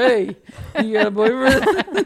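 tough-guy Italian mobster voice. Retelling own past question to a woman: imitating an italian mobster. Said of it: "an Italian mobster".

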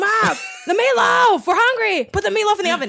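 very high-pitched, shrill, loud hollering. Retelling how a man yells to his mom, retelling a man yelling. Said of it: "he yells like".

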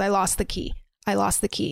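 normal talking voice

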